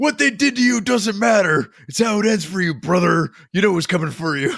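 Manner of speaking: very high, booming ring-announcer wrestling promo voice. Wishing the Clegane Bowl challenge were read this way, in a WWE wrestler voice. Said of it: "read in like a W W E voice".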